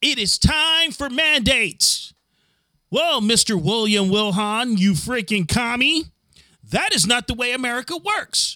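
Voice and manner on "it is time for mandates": slow, unhurried, deliberate, spelled out word by word. Repeating a line just heard in a played clip: imitating Bill de Blasio. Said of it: "Did you hear the way he said that right now?".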